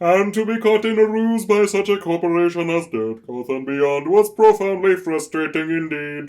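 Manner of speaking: stilted, high alien voice. Speaking in character, using a Galaxy Quest Thermian alien voice. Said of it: "You do sound like an alien".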